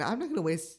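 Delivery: cracked, breaking voice cracking up high. A sick channel host about to get into her story, voice cracking. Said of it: "that fucking voice crack".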